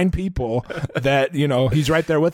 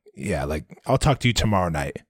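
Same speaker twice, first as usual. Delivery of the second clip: hushed half-whisper under the breath; 9 semitones lower, 3 dB quieter than usual. Retelling how Matt answered MJ: imitating Matt half-whispering. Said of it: "he was whispering".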